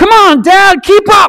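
put-on play-acted very high-pitched, loud little kid's shouting. Speaker retells a little boy running ahead of his dad, imitating a kid shouting. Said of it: "he shouts to his dad".

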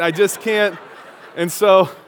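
ordinary delivery

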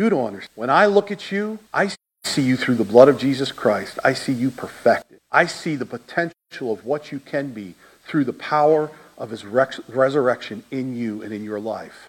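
gentle, soothing, sweet, calm, low voice. Retelling what God said in your heart when you got angry, retelling a calm, sweet voice. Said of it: "in a calm, sweet voice".

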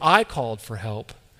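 pronoun "I" heavily overemphasized. Rereading a passage aloud, really overemphasizing the pronouns: heavy stress on "I". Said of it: "this time really overemphasizing those pronouns".

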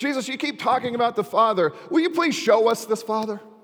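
exasperated fed-up pleading. Retelling a scripture story, act out one man's frustrated plea to his teacher. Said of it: "you can almost hear the frustration in his voice".

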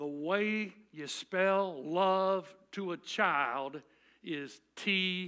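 put-on loud, drawling Texas accent, laid out slow. Speaker quotes author and popular speaker Zig Ziglar, in Zig Ziglar's Texas drawl. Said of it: "in his Texas accent, drawled".

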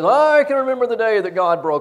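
high, loud, screaming outburst. Retelling what a guy once said about being broken: imitating someone screaming. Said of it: "he's screaming at me while he's saying this".

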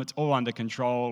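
normal talking voice

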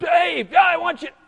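put-on shrill, very high yelling call. Speaker describing being far from God: acting out God yelling. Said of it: "He's yelling at me".

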